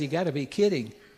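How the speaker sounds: ordinary delivery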